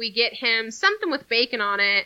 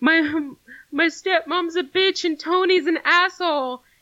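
mock tearful, sobbing, blubbering outburst; 6 semitones higher than usual. Retelling what a man said while sitting on the ground, imitating someone crying. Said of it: "he starts crying".

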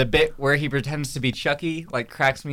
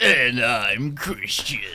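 fake, put-on smoker's voice. Introducing himself on a podcast: put-on smoker's voice. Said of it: "you just sound like a smoker".

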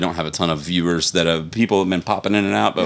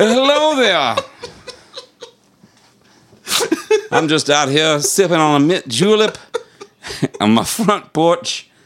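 high-pitched, swooping, exaggerated Louisiana accent; 11 semitones higher than usual. Voicing a character the players are inventing together: PJ Bottoms Louisiana accent. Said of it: "he speaks with a Louisiana accent".

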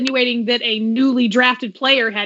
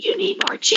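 mock sultry, seductive whisper, higher pitch; 8 semitones higher than usual. Voicing a drink that tells the speaker they need more gin: put-on seductive whisper. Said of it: "it seductively whispers".

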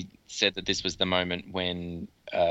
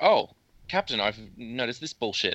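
patronising, condescending, talking-down tone; 4 semitones higher than usual. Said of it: "Should do it less, uh, condescendingly".

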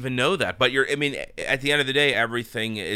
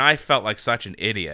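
normal talking voice

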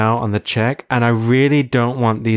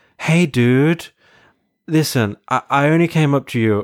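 casual put-on American accent; 3 semitones higher than usual. Retelling what a stranger who stopped the speaker said: American accent. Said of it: "he has an American accent and he's like".

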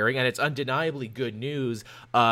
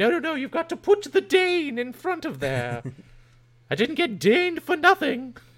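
high put-on voice swooping all over; 14 semitones higher than usual. Chatting with a co-host, trying out a new voice: a Judi Dench impression. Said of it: "this is a new voice I'm trying out now".

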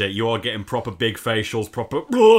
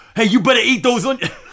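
very high, cartoonish put-on character voice; 12 semitones higher, 4 dB louder than usual. Reading an Urban Dictionary example sentence aloud in Taz's voice. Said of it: "gotta read this in taz's voice".

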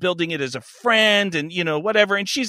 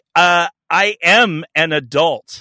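smug, self-satisfied, very slow and drawn out; 4 dB louder than usual. Retelling a woman's reply after feeling insulted: imitating a smug retort. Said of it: "she gets all fucking, like, smug".

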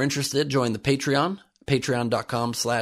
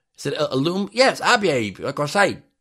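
put-on Cockney British accent; 4 semitones higher, 3 dB louder than usual. Reporting on an Australian company, voicing its people in a chimney-sweep Cockney British voice. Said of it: "making them a chimney sweep Cockney British voice".

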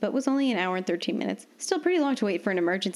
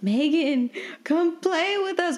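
shouted, high, spooky ghostly voice; 8 semitones higher than usual. Narrator reads a character calling out to a friend as a ghost, shouted ghostly voice. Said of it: "Ewan shouted in a ghostly voice".

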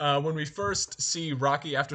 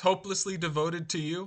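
usual speaking voice

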